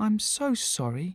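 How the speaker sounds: gentle, soft, light, hushed murmur. A woman responds to a man who shook his head sadly, softly. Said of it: "said MJ softly".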